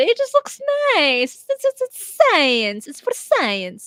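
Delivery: put-on Italian accent, sing-song. Speaker retells scientists showing off their mammoth meatball, in a put-on Italian accent. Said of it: "it just felt appropriate to use an Italian accent there".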